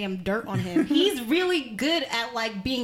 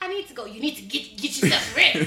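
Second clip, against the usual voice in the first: put-on elderly man's voice. Teasing the other speaker, acting out what they would say: old man voice. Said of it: "You'd be like".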